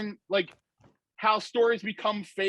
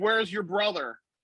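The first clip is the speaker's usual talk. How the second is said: usual speaking voice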